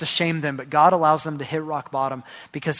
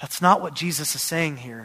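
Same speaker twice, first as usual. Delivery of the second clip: usual speaking voice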